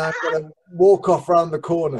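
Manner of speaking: normal talking voice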